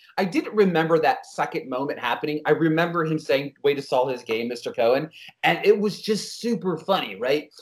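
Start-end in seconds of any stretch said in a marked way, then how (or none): none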